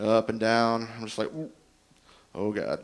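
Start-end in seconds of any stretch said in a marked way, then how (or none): 1.3-2.8 put-on, low, soft, queasy sick-to-the-stomach moan. Retelling getting sick on a ride as an adult, acting out past queasiness. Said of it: "My stomach just starts doing somersaults".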